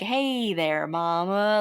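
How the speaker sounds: very smooth talker voice, "mama" drawn out. Describing a character's early lines, quoting him in a smooth-talking voice. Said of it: "very smooth talking".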